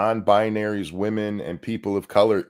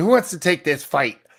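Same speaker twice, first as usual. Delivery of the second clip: fast, mocking, fake macho voice, trying too hard; 6 semitones higher than usual. Mocking a man rallying a crowd against Republicans, repeating him in a mocking fake manly voice. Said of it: "Even as he's trying to be manly".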